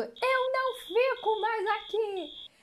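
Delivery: very slow, high, dragged-out yell. Retelling a woman running past during a hotel alarm: imitating someone shouting. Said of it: "passou por nós gritando".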